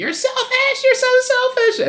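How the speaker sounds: very high, very loud screeching shout. Describing a film scene where she yells at him: imitating a screeching yell. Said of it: "kind of screeching".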